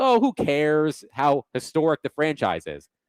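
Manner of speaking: normal talking voice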